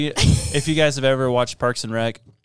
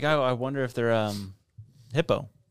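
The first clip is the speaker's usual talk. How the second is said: ordinary talk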